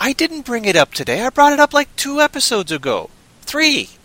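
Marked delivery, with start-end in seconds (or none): 1.2-3.8 loud high-pitched yelling. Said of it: "Sorry, I'm yell-".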